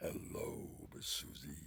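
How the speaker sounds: whispered, breathed-out, creepy lurking villain voice. Recalling calling out to people by name while playing Pinhead, Pinhead voice. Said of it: "I was pinhead with a chainsaw, and I would talk like this".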